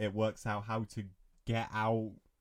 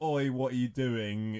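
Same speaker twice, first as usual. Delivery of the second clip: mock, mild, half-shouted calling out. Speaker recounts a movie scene where a guy yells, retelling a shout. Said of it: "Then the guy shouts".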